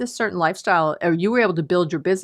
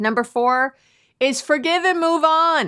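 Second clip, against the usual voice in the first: high, raised, shouting voice; 9 semitones higher than usual. Announcing the fourth point to listeners, yelling. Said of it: "I'm yelling".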